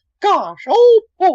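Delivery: very high cartoon falsetto, popping up in pitch. Show the Disney character voice you told your agent you could do, a Mickey Mouse falsetto. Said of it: "I could do a Mickey kind of ... that falsetto thing".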